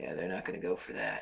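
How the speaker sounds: put-on dead earnest, serious, no joke in it. Speaker retells what a guy said during a serious conversation, retelling a non-joking, serious line. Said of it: "in a non-joking voice".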